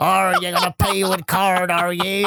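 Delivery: automated machine voice talking like a pirate. Speaker retelling a Halloween self-checkout: Poundland self-checkout pirate voice. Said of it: "talking like with pirate voices".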